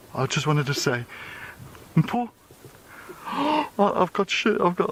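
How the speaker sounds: high, choked-up voice breaking, nearly crying. Watching a newborn lion cub on a sighting, almost crying. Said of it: "I'm almost crying".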